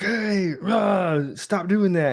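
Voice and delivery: mock very high, very slow, drawn-out yell. Acting out a parent scolding kids after being ignored: imitating a parent yelling. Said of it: "how come you're yelling at them?".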